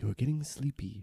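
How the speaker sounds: soothing tone. Lulling the guards to sleep so the others can sneak out: soothing tone. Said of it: "provide a, a soothing tone".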